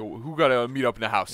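weird put-on jungle cat voice. Watching a jungle cat trying to get into the house, voicing it as a weird cat impression. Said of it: "It's a weird impression of a cat".

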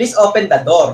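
put-on Filipino English accent. Showing how English sounds with this accent: imitating a Filipino accent. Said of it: "the Filipino accent is like".

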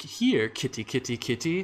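really creepy, eerie voice. Describing how a trailer begins, imitating a creepy voice. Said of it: "a really creepy, like".

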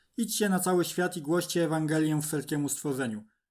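ordinary talk

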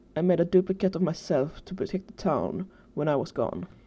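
ordinary delivery

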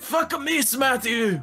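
put-on Japanese accent. Joking with a co-player during a game, in a stereotypical Japanese accent. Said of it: "speaking like a stereotypical Japanese".

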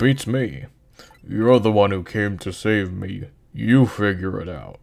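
deep, big, strong big-guy voice. The speaker voices a character's reply in an Asgore voice. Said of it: "that's just my deep guy voice".

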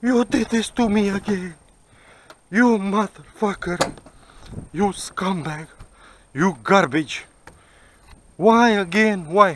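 high, put-on sobbing, angry crying rant. Telling of being thrown off a train, the speaker imitates his woman crying. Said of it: "My woman start crying again".

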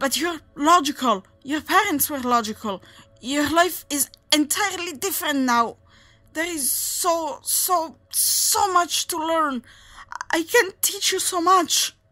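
high-pitched, loud, desperate pleading. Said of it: "He propped himself up on his bleeding stumps".

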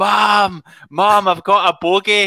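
put-on loud toddler voice. Retelling calling out from the audience during mom's school presentation, loud toddler voice. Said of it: "this big voice of like 1 or 2 year old John going like".

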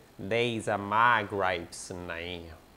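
low-pitched, slow cartoon voice. Trying out a Family Guy line for listeners to judge: Cleveland voice from Family Guy. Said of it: "I like to do his voice".

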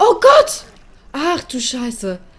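very loud, very high startled cry of fright. Flying along in a game when something suddenly startles them, startled exclamation. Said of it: "der hat mich so richtig erschreckt".

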